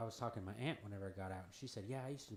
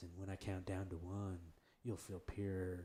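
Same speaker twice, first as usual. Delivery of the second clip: put-on cool, smooth, meditation-guide style voice. Recalling a guided-meditation guy's words, imitating his cool, smooth voice. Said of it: "this real cool, smooth voice".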